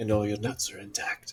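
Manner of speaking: soft, hushed half-whisper, close and leaning in. Leaning down while handing over a cloak: half-whispering. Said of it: "I lean down and I kind of whisper".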